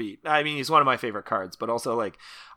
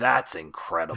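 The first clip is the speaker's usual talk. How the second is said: put-on old man voice, dripping sarcasm; 6 semitones lower, 4 dB quieter than usual. Quoting a game hero's wow emote: imitating a sarcastic old man. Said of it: "So his sarcastic old man".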